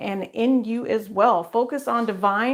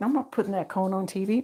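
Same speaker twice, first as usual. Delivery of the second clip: upset pet voice, quieter; 2 semitones lower, 5 dB quieter than usual. Speaking for a dog wearing a cone, voicing the upset dog. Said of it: "She's like".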